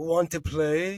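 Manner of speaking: odd, strange low deep voice. Retelling a show scene where something appears behind a character, deep, weird voice. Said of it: "he's got this kind of deep, weird voice".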